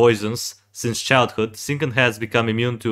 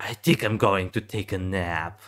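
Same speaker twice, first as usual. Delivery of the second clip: put-on teen boy voice, quieter; 4 semitones lower, 6 dB quieter than usual. A speaker reads out a game character's quotes, teenage boy voice. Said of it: "using the voice of a fourteen to seventeen year old boy".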